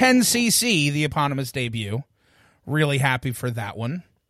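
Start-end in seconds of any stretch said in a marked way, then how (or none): 0.0-0.9 dramatic, high-pitched, loud belted delivery. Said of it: "drum roll please".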